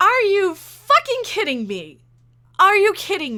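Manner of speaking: loud, outraged, angry shouting. Speaker reacts to trolls derailing a beloved sci-fi franchise, angry shouting. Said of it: "I'm shouting so much".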